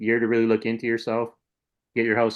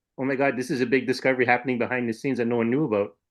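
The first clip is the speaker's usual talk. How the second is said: plain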